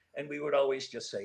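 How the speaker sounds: normal talking voice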